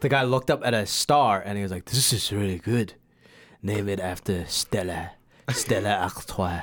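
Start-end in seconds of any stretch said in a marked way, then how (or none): 1.9-6.6 put-on Belgian-accented delivery. Retelling the man in the Stella Artois commercial, Belgian accent. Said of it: "That's a really good accent".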